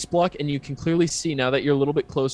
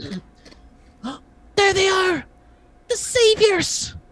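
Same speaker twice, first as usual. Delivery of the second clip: tiny, very high, slow, squeaky kobold voice; 4 dB louder than usual. A storyteller voices a tiny kobold calling out to the players; very high-pitched kobold voice. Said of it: "it's a very high pitched voice goes".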